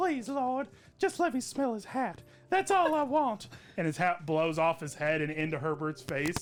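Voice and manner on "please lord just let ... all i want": mock elderly male voice. Retelling a Family Guy scene, quoting the old man: Herbert impression. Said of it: "He's like".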